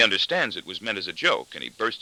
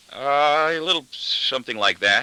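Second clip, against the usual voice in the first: hesitant, evasive stammer, higher; 5 semitones higher than usual. Reading a novel aloud, narrator answering family questions: stammering evasively. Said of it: "I stammer evasively".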